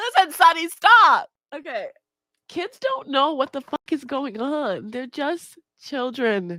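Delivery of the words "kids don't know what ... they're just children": tearful crying with cracking, breaking voice. Talking to the crowd about kids, breaking down and crying. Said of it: "Literally, I'm crying right now".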